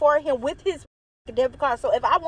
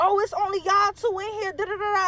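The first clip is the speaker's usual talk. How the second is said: high, accusing, hollering voice; 6 semitones higher than usual. Retelling how the boyfriend's mother accused them: imitating a mother hollering. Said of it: "So she hollering".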